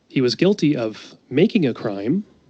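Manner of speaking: ordinary talk, nothing marked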